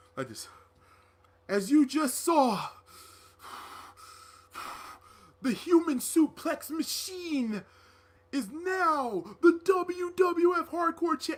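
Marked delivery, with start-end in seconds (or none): 1.5-11.4 bad wrestling promo voice, very slow, drawn out, high. Pretending to be Taz holding a mic, cutting a promo: bad Taz impression. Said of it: "I can't do a good Taz impression".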